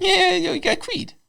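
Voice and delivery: very high showman announcer voice, like a TV host. Introducing a band on a late-night show: Jay Leno impression. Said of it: "Jay Leno, everybody".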